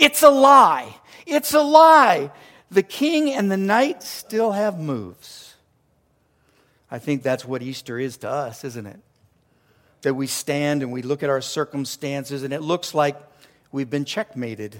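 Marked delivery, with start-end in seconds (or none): 0.0-2.3 sudden, abrupt, high, loud, drawn-out, swooping shout. Speaker telling of a man who stared at a painting for hours: retelling a sudden loud shout. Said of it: "he shouts out all of a sudden with a loud voice".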